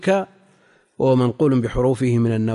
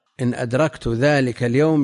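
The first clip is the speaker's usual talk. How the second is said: ordinary delivery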